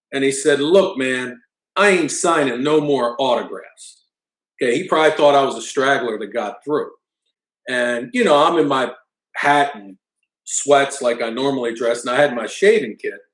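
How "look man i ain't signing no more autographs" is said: put-on contemptuous, nasty, slow, dismissive tone. Retelling a very tall man who turned and looked down at the speaker, imitating a nasty tone. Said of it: "the nastiest tone of voice".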